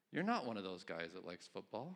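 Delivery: very condescending, low voice, talking down. Retelling a conversation with Julie; imitating Julie, condescending. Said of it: "Very condescendingly".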